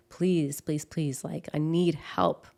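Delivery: mock crying while pleading. A mother recalls calling her son's doctor's office for help, retelling tearful pleading.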